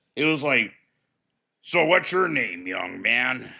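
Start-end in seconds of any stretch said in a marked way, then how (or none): 1.6-3.4 low, grizzled, hardened voice. Recalling a fellow inmate who asked his name, doing the man's grizzled voice. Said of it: "I could do his voice".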